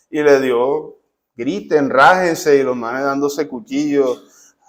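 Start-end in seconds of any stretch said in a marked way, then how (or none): none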